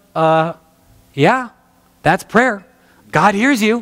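snarky, sarcastic delivery, acted out. Retelling a teacher's answer to a girl asking about prayer: imitating Pam, sarcastic. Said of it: "she probably didn't say it that sarcastic".

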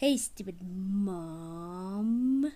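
put-on slow, drawn-out, taunting baby voice.

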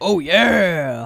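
booming, big bellow, stretched long. Gaming, saying a character sounded like the Kool-Aid Man, doing a Kool-Aid Man voice. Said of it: "sounded like the Kool-Aid Man".

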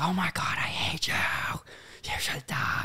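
put-on breathy whispered scream. Retelling what someone screams when up all night: imitating someone screaming. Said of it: "but he's screaming".

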